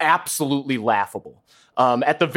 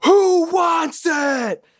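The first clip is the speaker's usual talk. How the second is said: shrill, very high, unhinged scream, acted. Retelling a scene where Gravik screams at everyone: imitating Gravik screaming. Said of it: "he just starts screaming at everyone".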